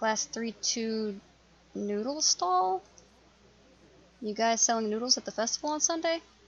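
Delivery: ordinary delivery, nothing marked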